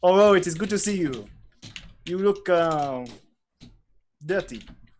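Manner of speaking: bad, clumsy, fake French accent. Francois greets you once you're put down; bad Francois French accent. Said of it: "This is a Francois accent".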